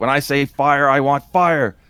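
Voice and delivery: slow, scolding, screamed reprimanding voice. Retelling a movie scene where Zeus yells at a goon: imitating someone screaming. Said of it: "Zeus is just screaming at the guy".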